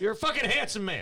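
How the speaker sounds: very high, loud, blaring shouted yell. Complimenting another speaker during a group conversation: yelling. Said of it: "I didn't mean to yell".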